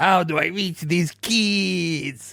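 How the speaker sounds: slow, heavy, stretched-out fake Spanish accent. Comparing a fake accent to Cartman's Mister Cartmanes voice. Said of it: "Cartman doing the Mister Cartmanes voice".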